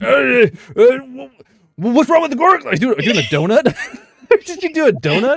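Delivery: very high, stammering, panicked orc voice. Game master voices an orc who panics, in a panicked orc voice. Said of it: "and he kind of panics".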